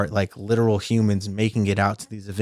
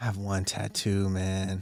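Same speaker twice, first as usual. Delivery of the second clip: sad tone, quieter; 9 dB quieter than usual. Answering whether you have any tattoos: sounding sad. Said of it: "Why do you sound so sad about that?".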